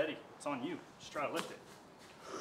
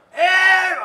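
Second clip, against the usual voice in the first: very high, loud raspy coach yell. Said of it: "he has, like, a super raspy voice".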